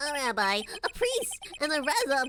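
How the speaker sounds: cartoonish, high, swooping sing-song voice. Asked to testify about the evening of the murder, answering in a voice like Bart Simpson. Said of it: "Sounds like Bart Simpson... that particular voice I made".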